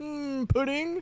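squeaked-up put-on voice, pushed very high. Joking that Bill Cosby avoided recording his voice: Bill Cosby impression. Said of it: "Definitely not his voice recorded".

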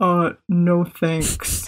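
faked, deepened low male voice. Retelling answering a woman who thought the speaker was a guy, in a deepened voice. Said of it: "So I deepened my voice and I was just like".

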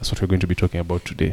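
grave, unsmiling, sober serious tone. Fixing a too-happy tone before introducing today's topic, serious. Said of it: "I should sound a bit more serious".

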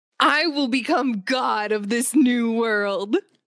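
theatrical anime villain voice. Speaker quotes a show's line for Brendan, delivered as a Death Note impression. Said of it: "Was that a pretty good impression?".

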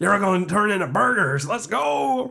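put-on American accent. Imagining squaring up to a cow, the speaker threatens it in an American accent. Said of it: "Why are you American?".

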